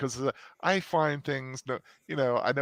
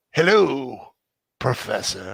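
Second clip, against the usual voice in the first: very loud, dark villain voice; 9 dB louder than usual. Answering the host's introduction, greeting the Professor in a Sith voice. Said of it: "the Sith voice?".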